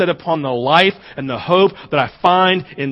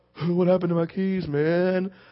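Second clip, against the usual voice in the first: mock drunk voice, quieter; 7 dB quieter than usual. Retelling taking the keys from a drunk person: imitating a drunk person. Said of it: "I would take drunk people".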